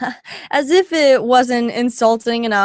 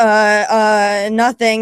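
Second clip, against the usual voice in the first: put-on flustered, caught-off-guard, stammering stumble. Retelling own reply when asked what's wrong: imitating own frazzled reply. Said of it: "And I was just so frazzled".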